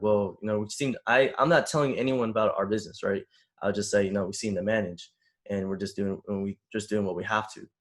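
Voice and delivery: plain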